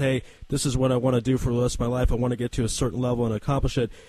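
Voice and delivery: normal talking voice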